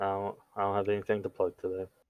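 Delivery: fake sad and depressed. Telling the other speaker there is nothing to plug, fake sad and depressed. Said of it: "You sound sad and depressed".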